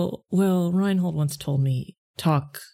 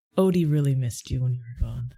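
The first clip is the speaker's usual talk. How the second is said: put-on quiet whisper, lower pitch; 3 semitones lower than usual. Recounting a scene, the speaker quotes what he says while petting Odie: retelling a quiet whisper. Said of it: "he says it so quietly".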